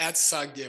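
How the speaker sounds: usual speaking voice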